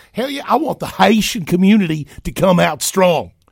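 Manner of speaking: very high, loud, put-on Southern accent. Mocking a remark about the Haitian community: imitating a Southern accent. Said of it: "if I was imitating a Southern accent".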